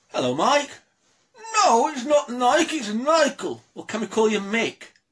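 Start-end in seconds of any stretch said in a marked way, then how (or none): 1.5-3.6 put-on ventriloquist dummy puppet character voice. A puppeteer showing what his puppet sounds like, in the Michael puppet voice. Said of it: "I'll give you an idea of what his voice is".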